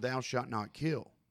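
ordinary talk, nothing marked

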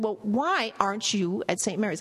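overdone emphatic questioning tone. Recounting what a woman asked about the hospital, retelling an overly loud question. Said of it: "in a much louder than necessary voice".

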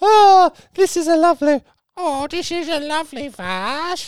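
put-on very high grandma voice. Telling a story about their grandma at a garage sale, imitating grandma's voice. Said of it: "That's more like my grandma's voice".

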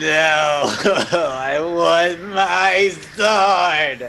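crying out the words through tears. In a role-playing game, a character turns down another's offer, crying in character. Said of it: "Are you going to be crying the entire time".

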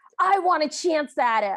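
mock, full-throated, loud, drawn-out bellow. Recapping a scene where a stepsister on the staircase calls out: retelling Minerva's bellow. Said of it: "And she just bellows".

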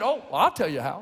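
put-on hillbilly accent. Quoting a man's answer about his integrated church, hillbilly accent. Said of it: "I can do hillbilly because that's just me".

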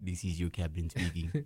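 put-on speaking with Serbian accent. Asked about the captain's accent, imitate the captain's announcement in a put-on Serbian accent. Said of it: "That was a Serbian accent?".

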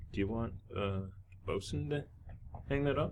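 very soft, quiet, in-character half-whisper. Voicing a crew member speaking quietly to the captain: half-whispering in character. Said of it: "and he whispers over to you".

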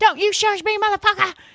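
mock, very high, furious shrieking scream. Recapping a show, acting out a cast member yelling at the man shushing her, retelling a scream. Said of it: "Brittany keeps screaming".

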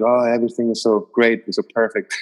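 usual speaking voice

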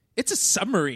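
mock sass-laden, sassy delivery. Retelling a character revealing a submarine blueprint: imitating a sassy delivery. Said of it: "he says it so sassily".

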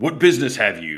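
gruff, slightly echoing, out-of-sync voice. A floating figure turns from the vat and addresses the players, gruff and echoing. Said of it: "A gruff voice that almost sounds like it echoes".

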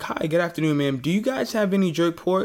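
courteous, charming, extra polite, very nice tone. Retelling asking a server for jerk pork: imitating own very nice tone. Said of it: "I think I'm being very nice".

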